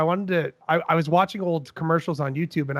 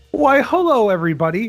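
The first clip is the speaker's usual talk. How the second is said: cheery, loud, raised, pitched-up TV weatherman voice; 5 semitones higher, 5 dB louder than usual. Greeting everybody, sounding like a weatherman named Al Caprinian. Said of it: "I feel like I sound like Al Caprinian".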